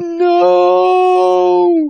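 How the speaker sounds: rough, shrill, very high, very loud, drawn-out screech. Falling to her knees, a woman screeches. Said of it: "Bleeder screeched".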